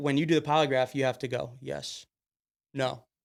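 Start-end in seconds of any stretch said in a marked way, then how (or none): 1.6-3.0 quiet, flat monotone with no inflection. Showing how answers must be given during a polygraph test, very monotone. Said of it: "Very monotone".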